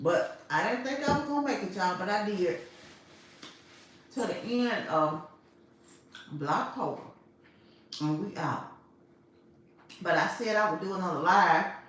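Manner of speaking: talking mid-chew through a mouthful. On a livestream after finishing Blocktober, talking while chewing. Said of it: "let me just stop chewing".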